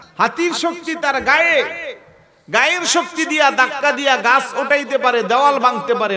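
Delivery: rising, high, loud, fervent preaching voice.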